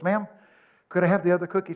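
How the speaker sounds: trembling, quavering, shaking voice. Speaker retells asking the little waitress at the end of the meal, retelling in a trembling voice. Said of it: "And I said in a trembling voice".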